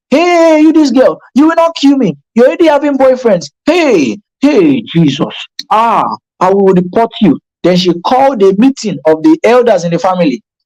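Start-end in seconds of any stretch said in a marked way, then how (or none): 0.1-7.4 high, scolding mother's shout. Retelling how a mother reacted to a love letter: imitating a mother shouting. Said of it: "She just shouted".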